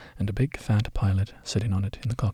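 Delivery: ordinary delivery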